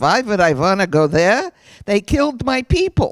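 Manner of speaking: put-on thick, heavy Eastern European accent. Retelling the father's reply when asked to visit Lithuania, heavy Eastern European accent. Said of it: "he said in his heavy Eastern European accent".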